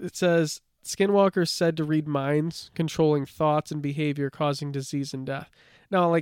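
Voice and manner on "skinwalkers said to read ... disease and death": normal talking voice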